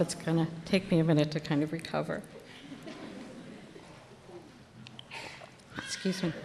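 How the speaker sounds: whispery, breathy voice catching, choked up with emotion. Responding after a farewell speech, choked up. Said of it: "I'm all choked up".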